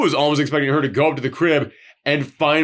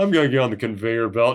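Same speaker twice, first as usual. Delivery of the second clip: put-on resigned calm, flat and tired; 3 semitones lower than usual. Acting out a woman who is just done, mock-resigned, flat and tired. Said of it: "It's not even like that. It's just like, ... Just like she's just done".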